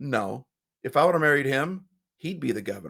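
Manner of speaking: soft, hushed, close and private half-whisper. Retelling a governor's wife's reply to her husband, retelling a half-whisper. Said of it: "whispered back in his ear".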